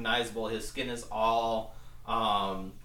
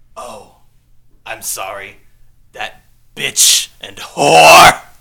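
booming, movie-villain-style voice; 21 dB louder than usual. Voicing a villain taunting the players: Beetlejuice voice. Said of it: "why does he sound like Beetlejuice?".

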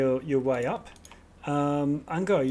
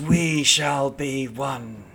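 loud, slow, very drawn-out hissing cackle; 4 dB louder than usual. Game master voicing a creature that hisses at a player in the player's own voice: hissing, cackling voice. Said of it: "it's cackling with your voice hissing at you".

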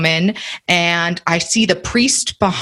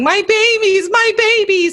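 play-acted very high, slow, tearful sobbing cry; 14 semitones higher than usual. Retelling what a woman said while she was crying, imitating her crying. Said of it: "And she's crying".

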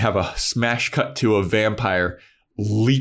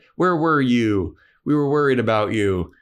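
mock, half-raised scolding with put-on yelling; 2 semitones higher than usual. Retelling a scene where a mom yells at her daughter: imitating someone yelling. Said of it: "her mom is yelling at her".

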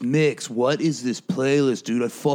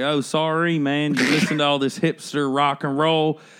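full put-on country accent, much slower; 3 semitones higher than usual. Speaker retells joking with a guy who became a friend, in a full country accent. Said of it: "And then I go full country".

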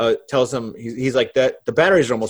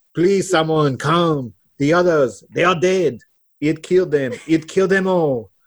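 put-on French accent, pitched up; 5 semitones higher than usual. Acting out a stranded survivor calling for someone to come help: French accent. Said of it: "I know how you do your French accent".

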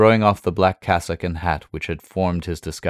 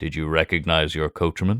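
ordinary delivery, nothing marked

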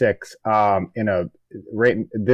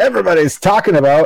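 showy, high, loud pop radio DJ voice; 8 semitones higher, 8 dB louder than usual. Repeating a phrase he just said, in a pop radio dj voice. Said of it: "You can tell that it was a pop radio DJ".

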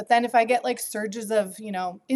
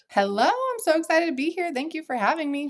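eager, high, swooping voice shooting up in pitch; 7 semitones higher than usual. Greeting the host at the start of an episode: high-pitched voice. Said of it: "my voice got so high pitched".

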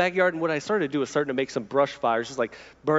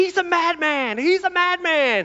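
put-on very high-pitched, drawn-out little kid's yell; 4 dB louder than usual. Retelling a daughter yelling from the kitchen at backyard smoke: imitating a child yelling. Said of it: "she's just yelling out".

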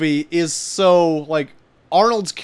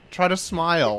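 usual speaking voice

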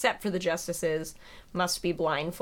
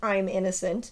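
usual speaking voice

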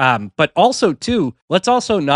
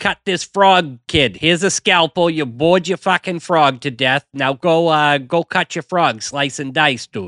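put-on Boston accent. Reimagining the show's teacher character with a boston accent. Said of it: "having a Boston accent".

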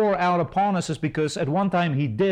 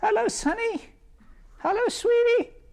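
put-on very high, sweet little old-lady voice. Describing grandmas greeting people on the street, imitating an old lady. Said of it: "You'll see old ladies, grandma, walk down the street".

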